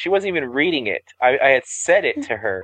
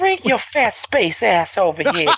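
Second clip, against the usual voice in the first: put-on high, creepy, leering old-man voice; 8 semitones higher than usual. Discussing a character's voice, the speaker quotes him like the old guy from Family Guy. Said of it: "He sounds more like the guy from Family Guy".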